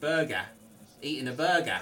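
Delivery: bad put-on Australian accent. Trying an Aussie accent as a joke: failed Australian accent. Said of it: "That's not Aussie".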